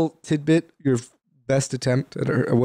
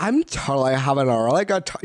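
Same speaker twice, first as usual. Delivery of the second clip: slow side-of-mouth drawl from the back of the throat. Imitating how she sounded: talking from the side of the mouth. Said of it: "you're talking, like, the side of your mouth".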